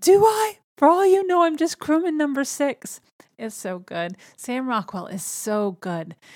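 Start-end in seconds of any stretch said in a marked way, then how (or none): 0.0-3.0 very high, loud, panicked yell. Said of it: "he starts yelling".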